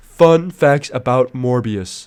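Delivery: put-on text-to-speech voice, very slow. Imitating a TikTok trailer for Morbius: TikTok Siri voice. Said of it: "TikTok, like, uh, Siri voice".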